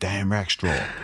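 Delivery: bad put-on American accent. Explaining a voice idea he dropped, say the name in a bad American accent. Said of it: "the worst American accent ever".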